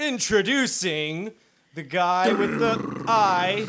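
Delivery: very loud, booming announcer call-out. Suggesting how the host should introduce everyone, a speaker demonstrates in an announcer voice. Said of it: "like an announcer".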